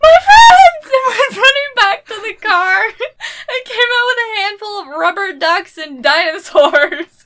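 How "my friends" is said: very high, very loud scream near tears. Retelling the moment at the car, the speaker acts out their own past scream: retelling a tearful scream. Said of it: "literally screamed on the verge of tears".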